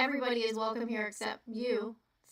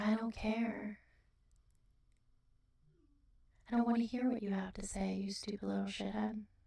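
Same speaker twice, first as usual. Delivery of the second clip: talking close to the mic; 4 dB quieter than usual. Describing how they handle rude people, the speaker demonstrates talking close to the mic. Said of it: "I get real close to the mic".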